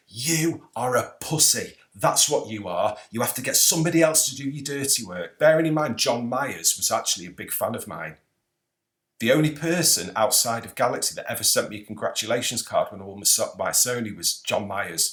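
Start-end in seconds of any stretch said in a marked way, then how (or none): 0.1-5.3 mock angry, heated voice. Retelling an argument, shouting at the other man: retelling shouting at someone. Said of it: "I'm shouting at him going".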